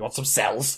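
put-on shady street dealer voice. Acting out a joke scene of a trench-coat street dealer selling cells: Kevin as shady trench-coat dealer. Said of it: "he's got this giant trench coat".

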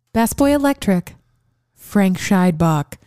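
slow, grand awards show announcer voice. Reading out crew credits to another speaker: award presenter voice. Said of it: "Let me say it again".

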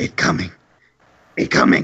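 put-on sniffing, lurking monster voice, broken grammar. Narrating the scene, the game master voices the creatures, voicing the sniffing creatures. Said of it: "and they go".

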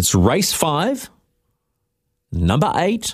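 slow, deliberate delivery. Host giving listeners the race pick so they can write it down, speaking slowly. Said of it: "I'm just saying this slowly so you can write it down".

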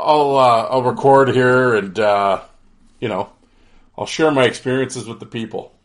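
ordinary talk

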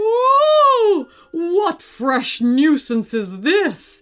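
loud, high, drawn-out dragon bellow, long ooh. Reading a story, a dragon whose tail was stamped on: bellowing dragon. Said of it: "he bellowed".

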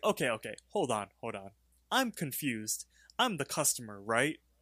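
acted, mad, all worked-up swooping voice. Retelling a cartoon scene, arguing with a waiter: imitating Rigby getting mad. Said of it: "Rigby gets all mad".

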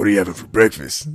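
put-on monster voice. Quoting a scene from the cartoon Big Mouth: hormone monster voice. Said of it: "That's how he talks".

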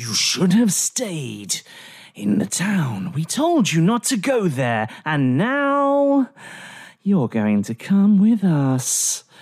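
demonic voice, calling out. A narrator voices the first tiefling warrior calling out, in a demonic voice. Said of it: "calls out in a demonic voice".

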